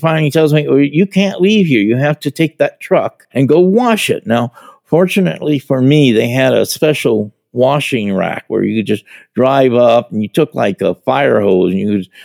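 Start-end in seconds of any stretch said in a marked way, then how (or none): 0.7-4.3 put-on yelling voice. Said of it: "he just starts yelling at me".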